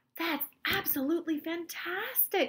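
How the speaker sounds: amazed, gasped exclamation, very high. A grandfather reacts to the shrunken chocolate bar, gasping. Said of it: "gasped Grandpa Joe".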